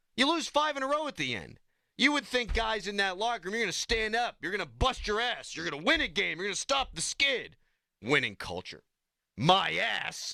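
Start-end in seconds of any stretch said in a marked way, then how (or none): 8.0-10.4 very slow, creaky, rough tough-guy voice. Podcast host sounding off about the team, in a put-on tough guy voice. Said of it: "That was my best tough guy voice".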